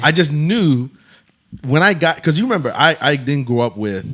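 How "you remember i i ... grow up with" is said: normal talking voice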